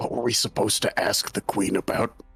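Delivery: hushed, whispered aside. Player in a tabletop game whispering to the rest of the party during a guard's talk. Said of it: "I like whisper to the rest of the party".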